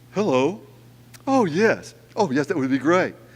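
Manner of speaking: put-on polite, switched-on telephone voice. Retelling how dad, gruff with family, answers a ringing phone, in his different phone voice. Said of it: "Completely different tone of voice with the one on the phone".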